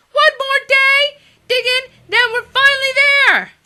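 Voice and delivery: very high, very loud, shrill goblin squeal. Narrator reading the lieutenant answering the Goblin King, Oink Balloon's squeal. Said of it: "squealed the lieutenant".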